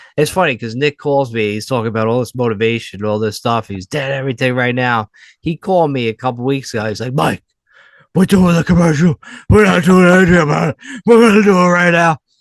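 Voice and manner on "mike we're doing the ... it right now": very loud, high, throat-straining, voice-wrecking delivery. Retelling a friend's phone call about making a commercial: Nick impression. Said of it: "my voice hurts when I do the Nick impression".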